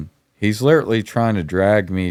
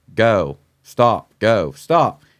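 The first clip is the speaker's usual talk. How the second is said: acted-out scream, louder and slower; 2 semitones higher than usual. Recalling a fight on a drive, the speaker reenacts screaming at the driver. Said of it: "And I'm screaming at him".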